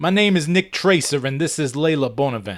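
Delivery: put-on speaking with New York accent. Narrating a scene, Nick Tracer introduces himself and a woman, New York accent. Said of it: "he stated it with a New York accent".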